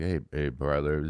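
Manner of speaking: very soft, hushed, barely audible voice. Retelling how a guest spoke at a bar: imitating soft-spoken quiet talk. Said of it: "very, very soft".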